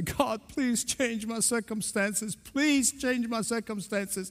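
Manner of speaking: acted, put-on crying. Retelling how they used to pray in hard times, acting out crying to god. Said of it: "I would cry to God".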